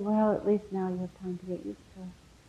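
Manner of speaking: quiet, soft voice. Retelling a reply to a friend whose close friend is dying, spoken quietly. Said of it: "Swamiji just said so quietly".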